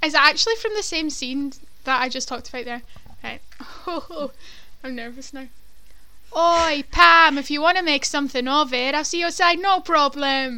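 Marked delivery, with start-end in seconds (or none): 6.4-10.6 imitated Welsh accent. Asked for an impression, the speaker quotes a scene: Nessa impression. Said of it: "Nessa impression?".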